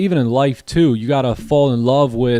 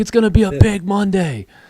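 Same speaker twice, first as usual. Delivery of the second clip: mock yell, higher; 8 semitones higher than usual. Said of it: "I was just shouting".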